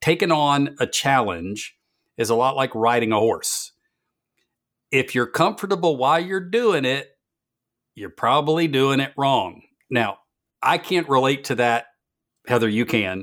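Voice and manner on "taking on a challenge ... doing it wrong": laid-on, heavy Southern drawl. Quoting a favorite line, doing it exactly as Ted Lasso says it. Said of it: "I'm gonna do it in exactly as he says it".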